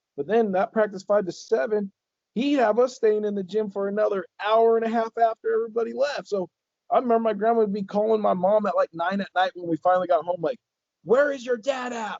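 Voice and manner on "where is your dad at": loud, high, demanding yell. Recalling late practices, the speaker quotes their grandma calling their mom: retelling grandma yelling. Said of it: "like yelling at her".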